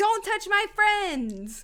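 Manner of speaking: very loud, very high-pitched battle cry. Voicing a character attacking another to protect friends: yelling in character. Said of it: "She yells".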